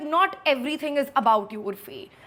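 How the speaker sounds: sharp, cutting, pointed tone. Retelling a reply to Urfi: retelling own pointed retort. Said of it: "And in this tone".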